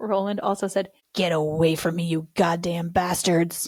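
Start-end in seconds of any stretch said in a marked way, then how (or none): 1.1-3.7 spooky, eerie, creepy put-on voice. Retelling what someone in the story said, in a creepy voice. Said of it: "That's a creepy voice too".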